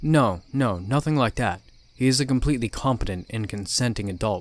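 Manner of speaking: ordinary delivery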